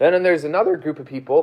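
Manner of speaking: voice cracking. A speaker tells a room about fitting in at school, voice cracking. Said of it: "voice crack".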